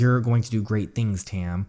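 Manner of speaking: normal talking voice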